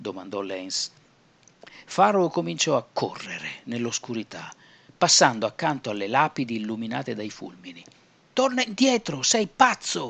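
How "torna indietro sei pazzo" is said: shrill, very high-pitched yelling. A man shouts after his partner, who runs off into the dark: shouting. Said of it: "urlò Jack".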